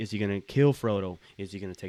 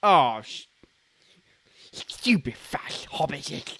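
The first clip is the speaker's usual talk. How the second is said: put-on creature voice, higher and louder; 5 semitones higher, 6 dB louder than usual. Answering a request for a best Gollum impression: Gollum impression. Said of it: "Hit me with your best Gollum impression".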